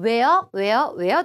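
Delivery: drawn-out "where".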